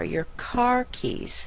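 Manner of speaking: slow, high, stressed car, keys said soft. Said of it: "So we want to stress car more than keys".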